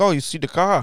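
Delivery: put-on poor, unconvincing Long Island accent. Retelling what a guy he met said to him, in a bad Long Island accent. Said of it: "I didn't do his accent very good".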